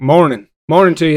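put-on Southern accent creeping in. Retelling own new way of greeting people: own southern accent. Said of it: "getting a Southern accent".

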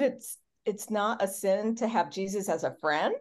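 plain

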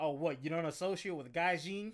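thick, heavy Alabama drawl. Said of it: "He's the guy who goes".

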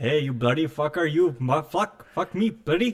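slow, drawn-out, put-on Indian accent. Acting out a joke mugging by an Indian man: put-on Indian mugger voice. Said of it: "If I were to get mugged by an Indian man".

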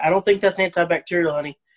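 ordinary delivery

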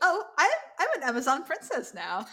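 acted, high, swooping, giddy, thrilled gush. Recapping an episode, answering Xena about her outfit, imitating giddy Gabrielle. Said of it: "all giddy".

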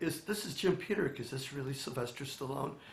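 meek, soft, timid, hesitant, stumbling voice. Retelling own words when calling back a movie star: imitating own timid self. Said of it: "I'm very timid".

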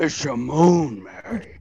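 slow loud leaning delivery. Doing an impression after being asked for one: Jimmy Stewart impression. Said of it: "Ever do your best Jimmy Stewart impression?".

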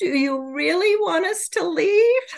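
mock sorrowful voice. Speaker retells what the channeled beings asked her, imitating a very sad voice. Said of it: "in a very sad voice".

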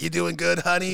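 put-on smoker voice. Retelling someone who comes by to refill the coffee: imitating a smoker's voice. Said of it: "a voice of like 1,000 cat tongues and 2,000 cigarettes".

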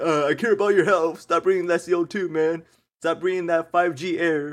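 loud, high-pitched yelling rant. Retelling how a passing stranger yelled about wearing masks: imitating a man yelling. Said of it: "he was just like".

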